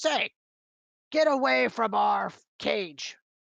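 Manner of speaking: loud, raspy creature voice. Voicing a gray-skinned dwarf-like creature that spots a character by the cage: voicing gray-skinned dwarf-like creature. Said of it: "points its finger and says".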